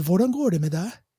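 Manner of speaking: local regional Norwegian dialect pronunciation. Showing how people around here ask how are you: local norwegian dialect. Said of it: "around here, they would say".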